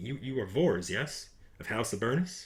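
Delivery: secretive, slow, hushed half-whisper. Voicing a character who huddles close to the player's character, half-whispering. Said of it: "He's kind of like whispering".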